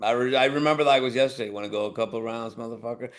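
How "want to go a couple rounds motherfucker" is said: calm, low, quiet, taunting mutter under breath. Speaker recalling a man's challenge, retelling it muttered under his breath. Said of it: "said it under his breath".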